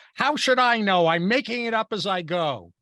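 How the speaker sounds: high-pitched blurt in fake anger. Retelling a man answering a panicked group around him, retelling a mock-angry blurt. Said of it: "blurts out in mock anger".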